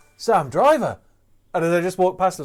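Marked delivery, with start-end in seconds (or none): 0.2-1.0 exhausted, worn-out, spent voice. Retelling a greeting from a runner who had just finished the race: imitating Adam Jonesio, exhausted. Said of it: "completely knackered".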